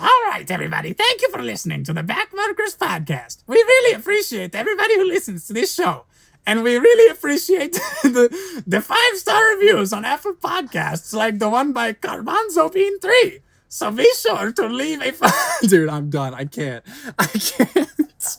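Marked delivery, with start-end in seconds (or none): 0.0-15.7 cartoon-villain voice, very high and fast. Podcast host doing the show's outro, Doctor Doofenshmirtz voice. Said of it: "do the outro in the doctor Doofenshmirtz impression?".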